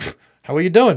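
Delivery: loud put-on New York accent. Imitating an English bus driver locking the door: New York accent. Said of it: "I always have the New York accent".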